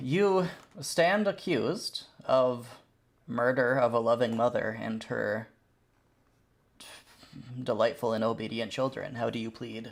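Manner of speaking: perfectly ordinary, calm, civilized everyday tone. Voicing a hovering creature accusing the players of murder: perfectly normal, civilized voice. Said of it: "it says in a perfectly normal and civilized voice".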